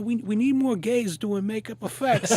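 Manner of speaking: put-on heavy, thick New Jersey accent, pitched very high. Makeup artist retelling what a man told them about makeup effects, thick Jersey accent. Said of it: "he's got like this really thick, like, you know, Jersey accent".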